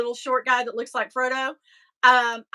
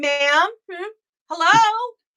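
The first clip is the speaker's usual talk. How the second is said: high, goading, prodding, taunting voice; 7 semitones higher, 4 dB louder than usual. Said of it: "I was like".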